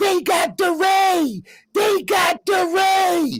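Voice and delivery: acted panicked shouting. Retelling how his colleague shouted at a crowd, acting out an alarmed yell. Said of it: "his colleague starts yelling".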